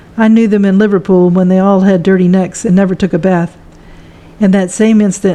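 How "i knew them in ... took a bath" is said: plain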